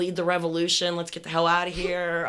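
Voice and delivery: ordinary talk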